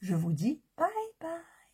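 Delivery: voice breaking mid-phrase. Signing off a video to viewers, voice cracking. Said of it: "Ça aussi, ça déraille".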